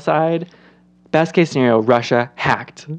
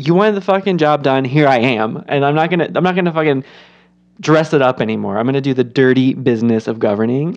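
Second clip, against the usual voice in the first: ordinary talk, nothing marked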